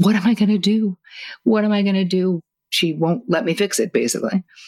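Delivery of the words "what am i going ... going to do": high, tearful voice, crying while speaking. Recalling a therapist visit, the speaker imitates their past self crying. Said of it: "I was like crying".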